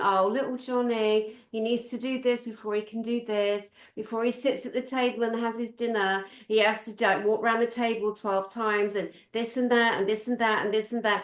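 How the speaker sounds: ordinary delivery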